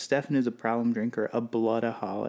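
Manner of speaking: ordinary talk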